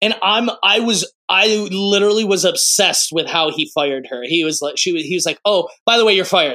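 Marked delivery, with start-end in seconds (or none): 5.5-6.6 put-on offhand, casual tone. Retelling how the emperor fires her: imitating Kuzco firing casually. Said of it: "like, very casually".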